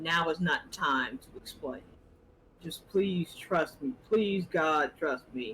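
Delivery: put-on, imitated pleading tone. Retelling how he asked for trust, imitating his pleading tone. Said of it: "in the same tone of ... in his voice".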